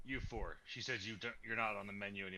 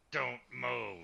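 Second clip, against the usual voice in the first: loud, rough, menacing shout, "move" stretched out; 3 semitones higher, 5 dB louder than usual. Intimidating goblins in a game by shouting at them: intimidating yell. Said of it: "Then I'm gonna intimidate them as well".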